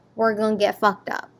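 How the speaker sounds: put-on American accent. Retelling what a man says, bringing a huge bowl for three to share, American accent. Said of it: "in an American voice".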